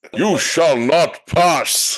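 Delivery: loud, very high, booming wizard voice. Demonstrating a TV-commercial-style fantasy voice: Gandalf voice. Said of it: "we're gonna try that in my T V C based Gandalf".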